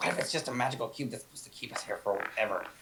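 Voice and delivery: hushed, secretive, suspicious whisper. A player suspicious of a cube whispers to Kieran. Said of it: "I'm just kind of whispering to Kieran like".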